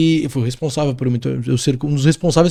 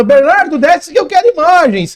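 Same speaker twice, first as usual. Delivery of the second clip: raised, high-pitched shout; 12 semitones higher, 6 dB louder than usual. Retelling how the anchor shouted at him from the studio: imitating the anchor shouting. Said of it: "o meu âncora gritando".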